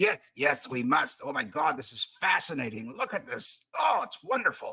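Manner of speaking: eager, excited put-on noble patrician voice. Voicing an excited character entering a place: in-character voice for Apentius. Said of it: "Right, the voice".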